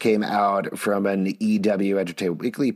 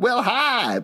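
very high, chirpy voice, pitched way up; 13 semitones higher than usual. Recalling a cartoon trailer line, imitating Rogue: Rogue voice. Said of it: "a split second of Rogue being like".

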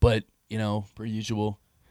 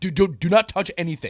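play-acted, raised, pitched-up, aggressive, locked-in tone; 10 semitones higher, 7 dB louder than usual. Retelling warning Jacob not to touch anything while mixing: imitating own aggressive warning. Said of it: "I said it, like, kind of aggressive".

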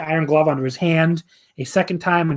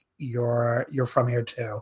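put-on dry deadpan, lower, quieter, slower; 5 semitones lower, 7 dB quieter than usual. Retelling a line someone said on a subtitled broadcast, mock-deadpan delivery. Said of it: "Milano just like kind of deadpans like".

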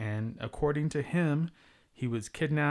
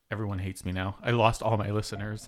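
ordinary talk

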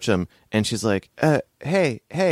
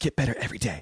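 very quiet, hushed, low-key, scolding murmur; 7 dB quieter than usual. Acting out a character admonishing herself: very quiet self-admonishing. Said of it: "and very quietly".

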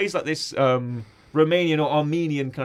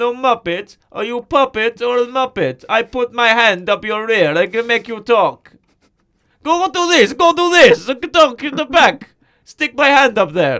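mock Kazakh accent, higher and louder; 7 semitones higher, 8 dB louder than usual. Joking about Borat visiting the Muppets, doing a Borat impression. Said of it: "It's me, Borat".

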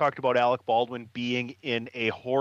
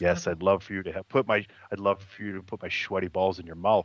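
subdued, positive radio host voice; 4 semitones lower than usual. Acting out a sketch's radio show hosts: imitating quiet, subdued radio hosts. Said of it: "they talk real quiet".

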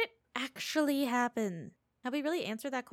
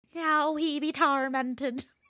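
put-on pirate voice, louder; 5 dB louder than usual. Watching a film together, suddenly commenting in a pirate voice. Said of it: "I don't know why I went pirate".

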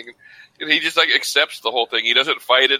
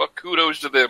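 ordinary delivery

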